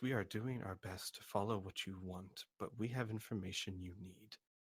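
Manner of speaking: soft, very quiet, hushed voice. Speaking as the character Al in a role-play, repeating the line: quiet voice. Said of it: "Al will say in a quiet voice".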